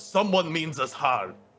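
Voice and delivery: high-pitched alarmed calling out. Game master voicing a character who wakes the resting party, yelling a warning. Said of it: "And he yells".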